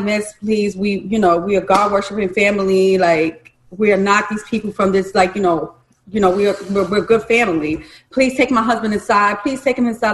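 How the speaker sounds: imploring, repeated pleading and begging. Retelling a phone call to a stranger, imitating herself begging. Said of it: "I was begging her".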